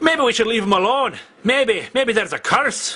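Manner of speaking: Scottish accent.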